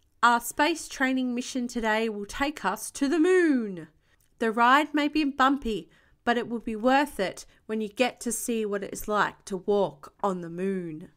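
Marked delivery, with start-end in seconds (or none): none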